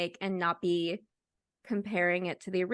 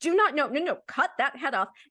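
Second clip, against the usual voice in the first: yelling, higher and louder; 6 semitones higher, 5 dB louder than usual. Retelling what they yell at a movie: imitating own yelling at the screen. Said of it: "I'm always yelling, like".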